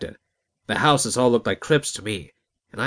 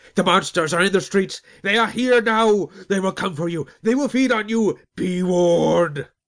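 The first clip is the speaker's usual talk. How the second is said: very high, crazed, lunatic shrieking; 9 semitones higher than usual. Narrating a story, voice a stranger's warning in a shrieking lunatic voice. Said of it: "he shrieked in his lunatic voice".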